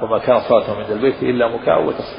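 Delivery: ordinary talk, nothing marked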